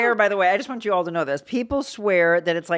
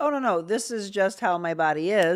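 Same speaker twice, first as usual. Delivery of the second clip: ordinary delivery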